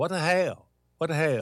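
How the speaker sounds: attempted accent that sounds Cajun. Asked to say it outside your native accent, try a put-on Cajun-sounding accent. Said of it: "It sounds Cajun".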